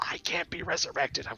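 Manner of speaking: whispering. Voicing a voice in the back of a character's mind: whisper. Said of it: "whispers in the back of your mind".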